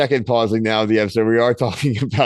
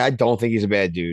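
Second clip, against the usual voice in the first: ordinary talk, nothing marked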